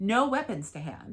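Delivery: ordinary delivery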